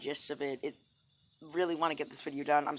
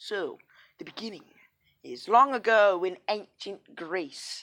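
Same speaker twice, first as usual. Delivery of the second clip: fake British storyteller accent, raised voice; 3 semitones higher, 5 dB louder than usual. Storyteller opening a retold Greek myth, in a put-on British accent. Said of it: "with this British accent".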